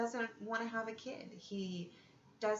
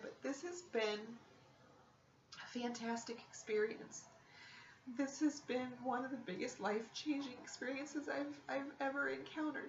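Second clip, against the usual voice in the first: choked-up voice on the edge of crying; 2 semitones higher than usual. Speaking about who they were a month ago, about to cry. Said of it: "because I'm about to cry".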